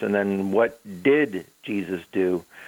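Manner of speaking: heavy stress on DID, drawn out slowly.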